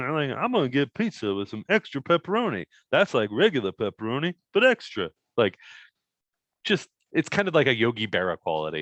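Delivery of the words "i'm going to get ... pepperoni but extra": gentle, naive, high, swooping sing-song voice. Demonstrate the voice that is fun to do, a Yogi Berra-like character voice. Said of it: "It's just fun to do that voice".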